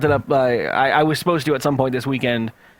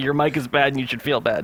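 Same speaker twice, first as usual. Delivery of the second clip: ordinary delivery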